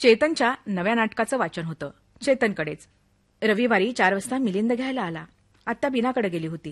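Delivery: ordinary delivery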